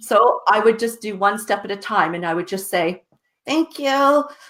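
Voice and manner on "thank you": higher-pitched fake polite tone. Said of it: "put that facade of a smile on my face".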